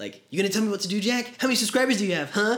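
put-on really young, super high childish little-kid voice. Describing a sketch, the speaker acts out his younger self in a super high young voice. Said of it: "with like super high voices and like really, really young".

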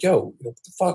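put-on angry outburst. Retelling snapping at someone who hadn't done anything, retelling snapping at someone. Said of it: "I kinda snapped on him".

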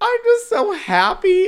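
play-acted very high, loud, tearful sobbing. Retelling a video of a contestant who lost: imitating Crystal Methyd bawling. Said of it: "As she's, like, bawling".

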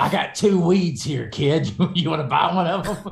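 goofy, shifty, shady street dealer voice. Reading a passage aloud, in a goofy drug-dealer voice. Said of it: "reading this like you're trying to sell me like some kind of fucking illicit drug".

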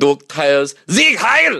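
mock German bark.

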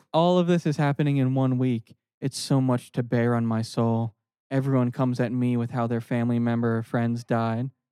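ordinary talk

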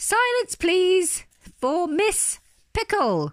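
very high, booming, drawn-out hippo-like call. Reading a story aloud, a hippopotamus calls for silence: booming loudly. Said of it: "the hippopotamus boomed loudly".

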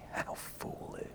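hushed voice. Acting out her line to him in a scene, whispering. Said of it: "She's whispering this to him".

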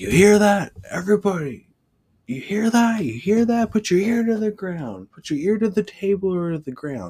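very high, shrill, loud hollering call. Recalling how he'd get the class to calm down and pay attention: imitating someone hollering. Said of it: "he'd start hollering and saying".

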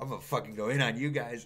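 ordinary delivery

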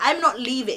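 ordinary delivery

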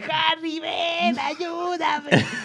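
very high put-on old man's voice. Retelling how an older man called him for help; imitating an old man. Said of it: "Lo imitas como de 60 años".

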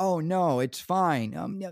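put-on, slow, drawn-out, dripping sarcastic drawl. Retelling how others on a lagging call insisted it was fine: weird sarcastic voice. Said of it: "They were using this weird sarcastic voice".

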